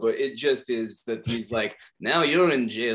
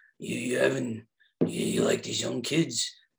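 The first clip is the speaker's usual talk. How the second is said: slower, put-on tough-guy voice; 3 dB quieter than usual. Retelling a movie scene where a man gets punished, doing a Clint Eastwood impression. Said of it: "it's becoming a little like my Clint Eastwood".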